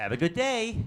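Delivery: bad, over-positive put-on American accent. Giving an example of how Americans sound, in a very bad American accent. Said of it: "That's my very bad American accent".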